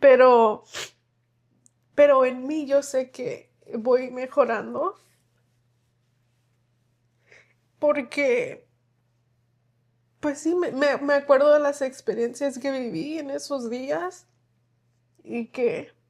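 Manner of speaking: crying while talking. Talking about remembering a child they gave up: crying while talking. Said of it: "Estoy llorando".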